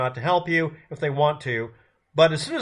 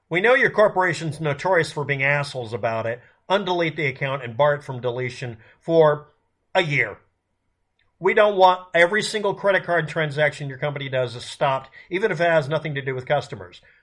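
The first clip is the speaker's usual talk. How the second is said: plain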